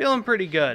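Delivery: sarcasm laid on thick, heavy-handed. Answering how everyone is feeling about the second wish: heavy sarcasm. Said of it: "is heavy on the sarcasm there".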